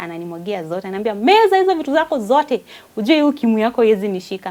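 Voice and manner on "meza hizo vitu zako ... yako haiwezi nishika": shrill, very loud, hollered tirade. Retelling how a partner woke up at three and started shouting: imitating husband shouting. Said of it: "he's talking like that and the neighbors are hearing".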